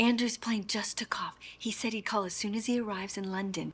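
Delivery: very soft, very high, hushed whisper. Passing on news about a plane taking off: whispering. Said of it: "Why are we whispering?".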